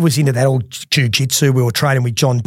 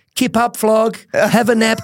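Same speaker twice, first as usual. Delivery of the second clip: mocking, pitched-up taunt through laughter; 10 semitones higher than usual. Retelling what a laughing man said while he lay knocked out, retelling someone laughing. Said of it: "he's laughing, and he's going".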